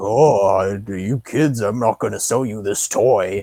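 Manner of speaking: slow, low baritone with oh drawn out. Retelling how a toy store owner turns kids away: Mister Bottom Check baritone impression. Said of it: "he has a good, like, baritone".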